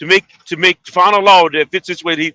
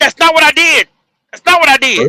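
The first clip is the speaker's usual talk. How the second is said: very high, raised yelling; 10 semitones higher, 5 dB louder than usual. During an argument, the speaker denies the other man's claim, yelling. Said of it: "all that yelling you doing".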